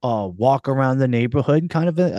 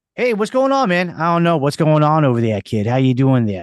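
put-on, attempted Boston accent. After calling take one for boston, the speaker uses an attempted boston accent. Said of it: "Boston, take one".

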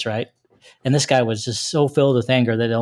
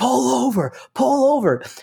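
mock very high, stretched, angry yelling; 12 semitones higher than usual. Retelling a mad driver yelling from his window: retelling a driver's yell. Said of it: "he's like yelling at me".

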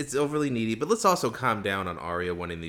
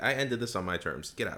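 ordinary talk, nothing marked

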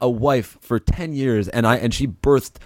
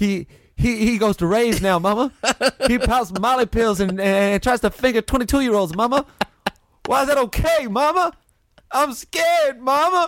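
put-on dying southern soldier voice, much higher; 12 semitones higher than usual. Riffing, the speaker pleads to mama, talking like a southerner dying at war. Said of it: "talking like a southerner dying at war".

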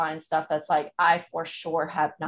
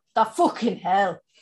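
put-on Irish brogue, higher and louder; 4 semitones higher, 5 dB louder than usual. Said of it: "he does his Irish brogue".

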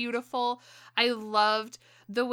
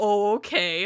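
mock sarcastic theatrical voice; 5 dB louder than usual. Gushing about a scene the speaker loved, mimicking Anna Kendrick's sarcastic reply. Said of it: "all sarcastic".

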